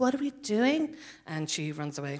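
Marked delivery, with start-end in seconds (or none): 0.0-0.9 put-on earnest, sincere girl's voice. Describing a scene where one of the earnest girls speaks: Aisling impression. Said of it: "That was my perfect impersonation of her".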